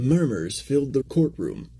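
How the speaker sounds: plain reading voice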